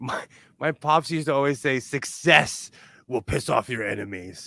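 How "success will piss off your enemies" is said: put-on gravelly, raspy old-smoker voice. Quoting his pops' favorite saying in a raspy smoker's voice. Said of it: "in his smoker voice".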